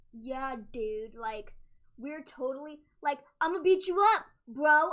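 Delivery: loud, drawn-out, drawling dude-bro wrestling-promo voice. Mocking a wrestler's new promo style: imitating Ricochet's dude-bro promo. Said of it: "every other word, he was like".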